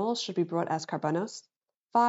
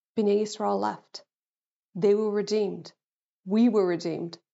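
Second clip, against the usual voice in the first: tearful, crying through the words. Summarizing the parsha as Bnei Yisrael are redeemed, crying while speaking. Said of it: "I don't know why I'm crying".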